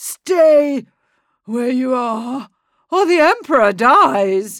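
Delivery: feeble, weak, slurred, pitched too high. Knife at the Emperor's neck, Oswald warns the others off: weak, high, slurred voice. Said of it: "Oswald's voice was weak now, too high, too slurred".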